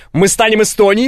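ordinary delivery

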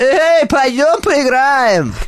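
very high, strange, made-up put-on voice. Showing off the voices they can do: strange put-on voice. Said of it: "А еще могу голосами такими всякими говорить, ублюдочными, смотри".

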